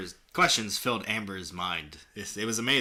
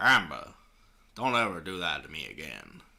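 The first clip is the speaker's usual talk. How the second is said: low, put-on country boy Southern drawl; 5 semitones lower than usual. Narrating a role-play, speaking a character's line to Amber in a country boy accent. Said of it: "Do a country boy accent".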